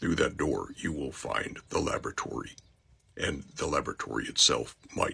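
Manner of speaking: deep, computer-altered, synthetic machine-generated sounding voice. Giving a character a voice, computer-altered voice. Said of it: "So I wanted to give him a voice that sounded computer generated, almost as if it was computer altered".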